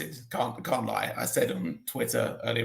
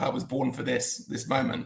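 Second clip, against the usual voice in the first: ordinary delivery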